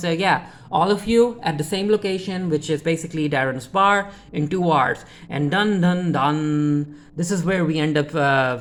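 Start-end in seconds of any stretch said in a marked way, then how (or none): none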